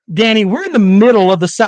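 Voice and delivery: ordinary talk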